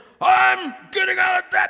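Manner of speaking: mock very high, resolute, steady, deliberate tone. Retelling what radio show callers getting out of debt say: imitating a caller's determined voice. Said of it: "They have this thing in their voice".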